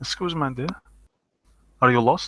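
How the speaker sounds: put-on Eastern European accent. Voicing a man who answers the door, in an Eastern European accent. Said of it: "he will say in an Eastern European accent".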